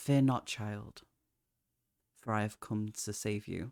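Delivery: gentle, serene, soft-spoken, calm woman's voice. Telling Evelyn a story, voicing a woman heard through the darkness, soft and calm. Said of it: "It is soft and calm. And she goes".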